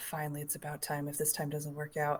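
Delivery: muttered under breath. Narrating a game, the speaker voices a character stepping through a mirror, mumbling under his breath. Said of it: "kind of mumble under his breath".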